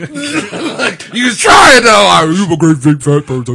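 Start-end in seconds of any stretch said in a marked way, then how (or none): 2.1-3.6 put-on deep voice. Teasing another speaker by imitating their voice: imitating a deep voice. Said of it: "I don't talk that deep".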